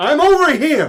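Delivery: very high-pitched, loud calling out. Voicing a character who answers loudly from behind: loud call from behind. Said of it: "you hear loudly behind you".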